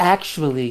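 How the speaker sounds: weird, sultry, sexy teacher voice. Voicing a memory of Desiree correcting someone: weird sexy teacher voice. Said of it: "you hear Desiree in a weird, sexy teacher voice".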